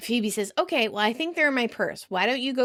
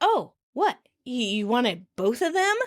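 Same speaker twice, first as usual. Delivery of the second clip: put-on shocked tone. Retelling a sitcom scene line by line: acting out Rachel's fake shock. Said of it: "Rachel plays shocked".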